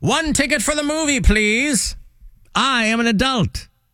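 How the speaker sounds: put-on very high, squeaky child voice faking grown-up. Joking about kids in a trench coat buying a ticket: kids posing as an adult. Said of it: "Or like the two kids in a trench coat".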